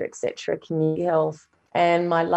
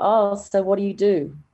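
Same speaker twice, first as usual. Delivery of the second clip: mock condescending, patronising, talking-down tone; 3 semitones higher than usual. Retelling what a hospital doctor said to them: mimicking a patronising tone. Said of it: "in this tone that's already patronising".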